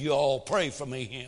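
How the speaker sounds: put-on Southern accent, slow drawl, words stretched long. Retelling a kid in a congregation asking for prayer, in a Southern drawl. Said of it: "in a southern drawl said".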